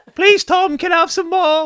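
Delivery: loud, high-pitched begging. Joking about a friend told to use a fork; Oliver Twist impression. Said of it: "like some Oliver Twist shit".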